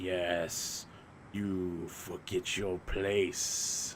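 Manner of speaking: very slow, super low, inhuman voice. Describing guards in a game to a friend, speak the second guard's line in a super low non-human voice. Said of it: "using like super low non-human voices that are like they all have reverbs".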